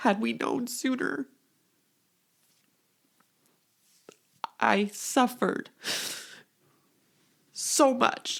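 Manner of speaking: overcome with emotion, voice up. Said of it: "I did not expect to get emotional".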